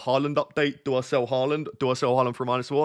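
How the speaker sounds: ordinary talk, nothing marked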